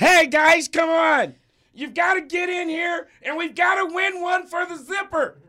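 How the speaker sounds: very high, loud, upset voice. Imitating a quarterback rallying the team: imitating Patrick Mahomes' voice. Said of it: "he does not talk like that".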